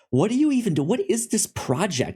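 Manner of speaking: very high, swooping, clueless-sounding, snarky sarcasm. Imitating a woman who comments from behind the camera: mock-sarcastic questions. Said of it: "she's always like real sarcastic".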